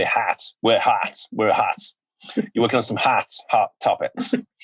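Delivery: slow, clumsy, put-on American accent. A host tells a guest about their work, bad American accent like Alan Miles. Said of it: "that was me trying to put an American accent on".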